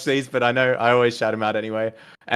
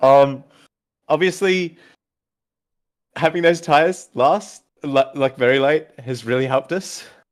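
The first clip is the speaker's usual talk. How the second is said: choked-up, teary voice, fighting back tears; 4 semitones higher than usual. After a third-place podium finish, speaking while trying to compose yourself. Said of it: "I'm trying to compose myself".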